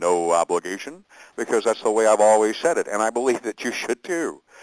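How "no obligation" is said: deep voice, sunk an octave or two, emphasized. Reading the agreement aloud, stressing the phrase in a much lower pitch. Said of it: "I always lower an octave or two".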